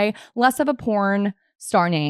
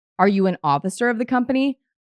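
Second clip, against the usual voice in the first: ordinary talk, nothing marked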